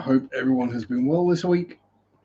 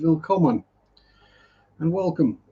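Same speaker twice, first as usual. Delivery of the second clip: put-on la-di-da posh accent; 2 semitones higher than usual. Greeting everyone at the start: posh accent. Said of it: "speaking German and in a posh accent".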